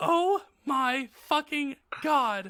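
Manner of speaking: very high, thrilled, excited shriek. Reading fan fiction aloud, the narrator hearing about a concert, screaming excitedly. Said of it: "I screamed".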